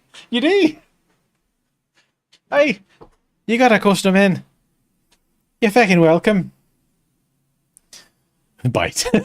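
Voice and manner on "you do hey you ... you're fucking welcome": very loud, put-on Irish accent. Trying out a line and doubting it sounds irish, in an attempted irish accent. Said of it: "That's not Irish, is it?".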